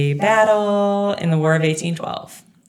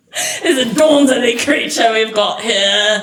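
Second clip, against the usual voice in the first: deliberate, put-on Australian accent, pitched up; 6 semitones higher, 4 dB louder than usual. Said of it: "That was like your Australian".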